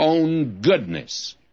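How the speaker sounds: stress on goodness, stretched out slow. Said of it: "I'll emphasize the word as we go through".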